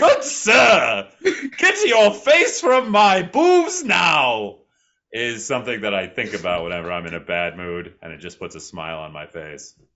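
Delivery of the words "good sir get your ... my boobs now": put-on very high, very loud, drawn-out, shrill old lady yell. Game master recalling a scene with Matt's character, yelling in an old lady voice. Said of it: "yell in an old lady voice".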